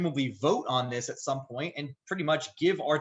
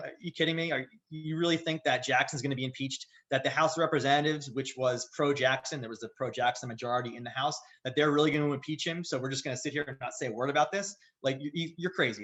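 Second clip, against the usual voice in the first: usual speaking voice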